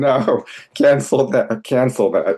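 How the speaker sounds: mild high yell. Recalling a night scream with guests over, quoting the speaker's wife: imitating wife yelling. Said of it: "my wife is yelling".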